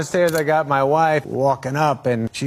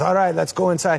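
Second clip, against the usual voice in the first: put-on French-accented host voice; 4 semitones higher than usual. Like a cheerful organizer ushering celebrities off the red carpet after the photographers have finished, gesturing the group toward the doors. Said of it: "with a French accent".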